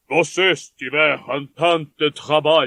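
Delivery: low, deep man's voice. Reading a story aloud, a father thanking his hostess: Monsieur Delacour's deep voice. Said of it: "disse ele com sua voz grave".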